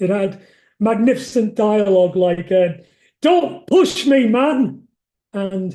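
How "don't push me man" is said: put-on Wigan accent. Quoting dialogue from a story set in a hideout after a botched robbery: unsuitable Wigan accent. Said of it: "all said with deeply unsuitable Wigan accents".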